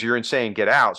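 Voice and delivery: ordinary talk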